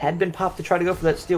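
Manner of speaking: normal talking voice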